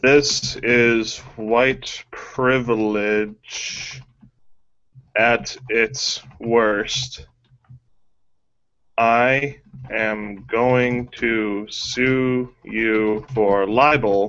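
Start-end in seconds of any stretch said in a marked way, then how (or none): none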